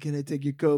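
gently eerie lady-vampire hostess voice. Retelling what the lady vampire asked, the speaker imitates her soft voice. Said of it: "like first soft and said".

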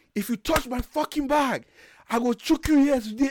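put-on very high, shrill, unhinged woman's furious yell. Retelling a girl's outburst at airport officials: imitating someone yelling like a madwoman. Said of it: "this girl started yelling like a madwoman".

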